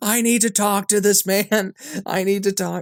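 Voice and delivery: very high-pitched, acted-out screaming outburst. Retelling a film scene where an attorney screams at the judge: imitating Brendan Fraser screaming. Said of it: "he's screaming at the judge".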